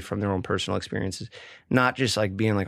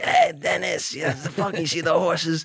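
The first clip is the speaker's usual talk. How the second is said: rough, raspy, pitched-up stoner voice; 8 semitones higher than usual. Retelling what his uncle who still smokes weed said to him: raspy voice imitating an uncle. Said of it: "a raspy voice till this day".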